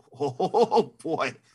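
high, laughing, surprised voice. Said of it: "And I was like".

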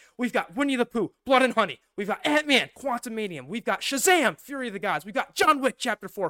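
very loud, rattled off quickly. With a minute left, the speaker rattles off the most anticipated titles, talking very fast. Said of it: "This will be the fastest I've ever talked ever".

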